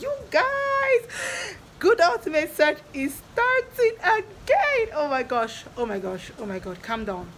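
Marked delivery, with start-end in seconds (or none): 0.0-4.9 very high, slow, thrilled excited squeal. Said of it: "But I'm just so happy".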